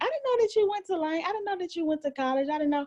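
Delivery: high surprised lady voice. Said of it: "the lady gonna tell me".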